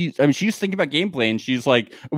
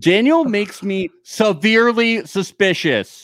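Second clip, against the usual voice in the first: forceful, heavily emphatic, every word hit hard; 5 semitones higher than usual. Speaker responding to a listener comment about daniel, heavily emphatic, underlined. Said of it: "whenever I talk like that, just know that it is underlined".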